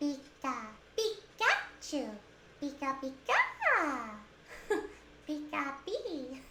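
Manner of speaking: high-pitched, soft, very slow delivery. Asked for a line, saying Pikachu in different ways in a Pikachu voice. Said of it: "I think my Pikachu is pretty good".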